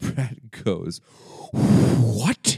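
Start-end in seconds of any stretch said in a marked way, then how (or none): 1.5-2.6 mock indignant, very loud what with hard H. Retelling a serious film scene, imitating Chris Pratt indignant. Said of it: "he gets, like, indignant about it".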